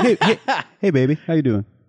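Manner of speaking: loose, hip, cool jazz-cat delivery. Retelling how John Williams talked back then: John Williams as a jazz cat. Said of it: "he was like a jazz cat".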